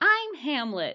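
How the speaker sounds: put-on baby voice. Joking about a tiny baby actor playing Hamlet: imitating a tiny baby. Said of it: "a tiny baby that's like".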